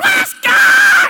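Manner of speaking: very loud, shrill, full-throated scream. Retelling how a preacher on a throne kept shouting: imitating a preacher screaming. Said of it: "he's screaming".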